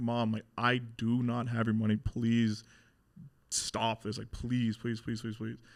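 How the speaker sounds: put-on tearful, desperate pleading. A son retells begging his mom to stop a beating, retelling pleading with mom.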